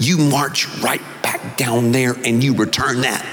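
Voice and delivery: put-on Mississippi-accented voice. Retelling a mother questioning her son: imitating mother's Mississippi accent. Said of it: "she said in her Mississippi accent".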